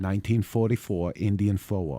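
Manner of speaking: attempted New Hampshire accent. Taking a challenge to say a phrase in a New Hampshire accent. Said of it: "say this in a New Hampshire accent".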